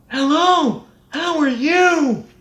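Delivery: very high speech spoken on the in-breath. Demonstrating a vocal exercise for the listener to try: inhaled speech. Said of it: "Thank you for asking me with your inhale phonation".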